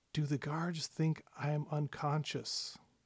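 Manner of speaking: hushed, secretive whisper. Voicing a sister who feigns unconsciousness and secretly asks you: whispering. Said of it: "she just whispers to you".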